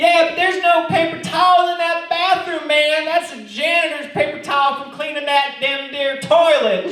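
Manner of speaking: put-on very high-pitched shout, yelled. Retelling a heckler at an open mic: imitating a heckler yelling. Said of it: "he yelled out".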